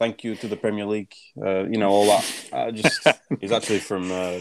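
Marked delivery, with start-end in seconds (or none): 0.0-1.1 dry, pointed, sarcastic tone. Imitating a manager moaning about fixtures: imitating Arteta's sarcastic tone. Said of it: "trying the same sarcasm".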